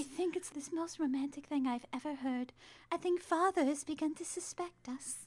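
high breathy voice. Acting out a movie heroine's lines in a high, wispy voice. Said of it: "she talks in a high, wispy voice".

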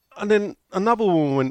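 ordinary talk, nothing marked

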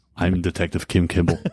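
Austrian accent impression. Trading movie quotes with another speaker, doing an Austrian accent impression. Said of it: "Is that Austrian?".

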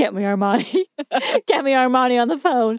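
demanding, bossy, commanding tone. Retelling a scene where someone impersonates Miranda Priestly: imitating a Miranda Priestly impression. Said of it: "he does an impression of Miranda Priestly".

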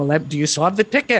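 put-on German accent. Retelling a story, quoting what their host asked about the tickets, German accent. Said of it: "German accent".

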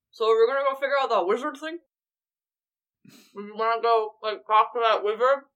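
words mashed by a full mouth. Voicing a character who walks back over to everyone: talking with an entirely full mouth. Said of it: "with an entirely full mouth just says".

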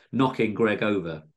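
plain

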